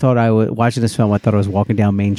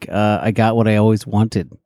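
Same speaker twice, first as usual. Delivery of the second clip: ordinary delivery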